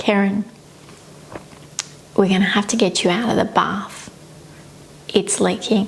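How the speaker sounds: small, utterly calm little voice. Retelling what she said to Keren in the bath, retelling a very calm little voice. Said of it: "in the calmest little voice".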